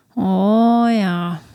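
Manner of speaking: put-on Newfoundland English accent. Answering a co-host with a joke reply: Newfoundland accent. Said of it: "Why do you sound like you're from Newfoundland?".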